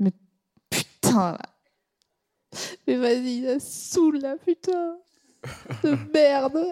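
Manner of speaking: acted crying. Acting out a woman crying in the street: acted crying. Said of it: "je suis une gonzesse, euh, et je pleure".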